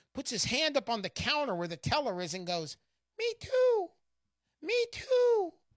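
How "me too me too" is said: tiny voice, way up high, slow. Telling a joke, a little voice speaks up at the bank teller's counter: tiny Uncle Sam voice. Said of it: "this little voice from down by your shins".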